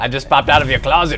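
low, creepy lurking voice.

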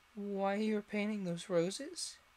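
timid, hesitant voice. Alice asking the card gardeners a question, a little timidly. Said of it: "a little timidly".

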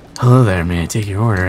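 silky smooth voice. Imitating a McDonald's worker taking an order: smooth voice. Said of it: "the sheer smoothness of his voice".

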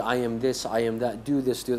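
plain

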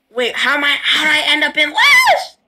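voice cracking. Just told they lost, a player asks how they ended up last; voice cracking. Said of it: "why are you voice cracking?".

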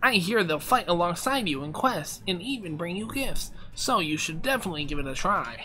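high, nasally game character voice. Voicing a character who has no nose, in a nasally voice. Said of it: "I give him a nasally voice".

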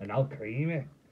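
a hint of Scottish accent. Showing how to say a card name: a bit of a scottish accent. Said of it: "say it with a bit of a Scottish accent".

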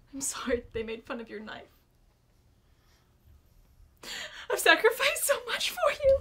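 very high, loud, swooping hysterical crying. A parent character berates their child about a mocked knife; crying hysterically. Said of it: "now I'm crying hysterically".

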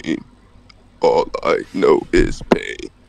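deep, villainous masked villain voice. Testing different voices, asked to hear the next one, Darth Vader voice. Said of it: "I can turn it to Darth Vader".

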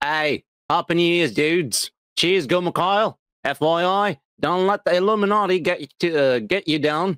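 put-on Australian accent. Reading a viewer's message aloud after being told to: Australian accent. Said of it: "You should read this like an Aussie".

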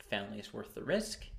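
usual speaking voice

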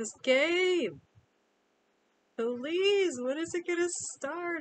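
very high, shrill, loud, eager, bursting with excitement. Dressed up and waiting for the game to begin, super excited. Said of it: "I'm so excited!".

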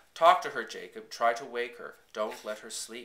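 ordinary delivery

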